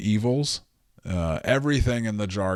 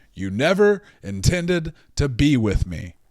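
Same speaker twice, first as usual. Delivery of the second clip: forcefully hurled delivery, pitched up higher; 5 semitones higher than usual. Imitating Gino from 90 Day Fiance on the reunion: Gino impression, yelling. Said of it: "This is my impression of Gino from ninety Day uh, Fiance on the reunion".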